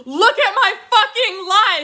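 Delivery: high, put-on crying and sobbing through every word. Retelling a cast member's outburst: imitating crying and sobbing. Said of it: "she's just crying and sobbing".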